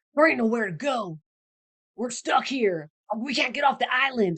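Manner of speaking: put-on horrible cowboy accent. Recapping a TV episode, doing Sawyer's reply in a bad cowboy accent. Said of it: "I'm trying to be a cowboy".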